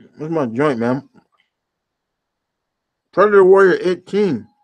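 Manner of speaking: talking with food in mouth while eating. Speaker apologizes for eating while talking, talking with mouth full. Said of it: "talking with food in my mouth".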